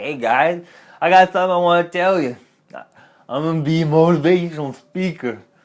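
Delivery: put-on loose, drunken slurring. Retelling telling friends a big goal: imitating own slurred speech. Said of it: "I was probably slurring a little bit".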